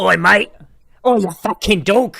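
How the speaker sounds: weak attempted Australian accent. After a clip about Australians, trying out an Australian accent. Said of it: "with my Australian accent".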